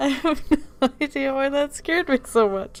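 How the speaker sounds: cracking up mid-sentence, high, laughing hard. Rewatching a clip that still makes them jump, the speaker is laughing really hard. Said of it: "*laughing really hard*".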